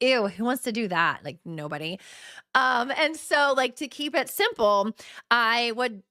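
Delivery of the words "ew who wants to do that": put-on annoyed, disgusted tone. Reacting to the idea of tracking sugar grams: mock annoyed. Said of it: "I'm so annoyed. I'm like".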